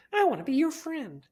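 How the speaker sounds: very high, sugary, cutesy doll voice. Imitating a talking toy in a commercial: very cutesy toy voice. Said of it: "very cutesy saying".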